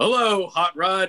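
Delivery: high, jokey, comic fan-dubbed hero voice. Retelling a fan edit that redubbed the cartoon: Optimus Prime voice. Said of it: "Optimus Prime's like".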